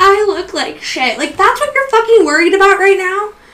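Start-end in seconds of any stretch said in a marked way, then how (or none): 0.0-1.2 put-on, slow, tearful, weepy crying voice. Retelling what she said on a phone call: imitating someone crying. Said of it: "And she starts crying, like".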